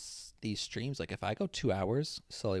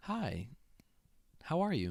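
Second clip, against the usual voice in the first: radio ad-read voice, much higher pitch; 7 semitones higher than usual. Saying a greeting as another person remarks on it, sounding like a radio ad. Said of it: "You sound like a like an ad".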